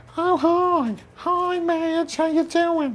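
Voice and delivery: put-on very high New York accent. Imitating a man the speaker met at the gym, in an extremely high New York accent. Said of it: "extremely high New York accent".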